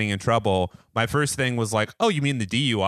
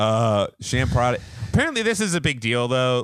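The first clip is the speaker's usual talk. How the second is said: ordinary delivery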